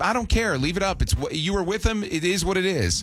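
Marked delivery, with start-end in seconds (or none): none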